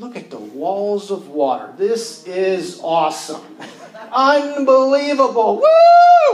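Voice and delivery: loud, swooping, giddy awestruck thrill, long drawn-out woo. The speaker acts out people moving forward in faith: imitating jumping for joy. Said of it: "become fixated at all that God is doing".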